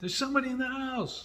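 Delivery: panicked high yelling.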